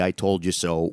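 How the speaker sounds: plain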